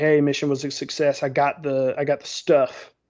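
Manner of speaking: normal talking voice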